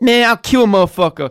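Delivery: clumsy, very high, loud, squeaky put-on voice. Showing a highlight clip line as Mike Tyson: bad Mike Tyson impression. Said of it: "It wasn't a very good Mike Tyson impression".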